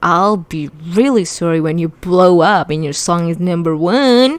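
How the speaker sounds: ordinary delivery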